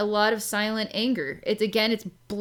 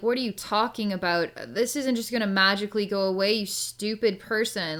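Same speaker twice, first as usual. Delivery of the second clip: usual speaking voice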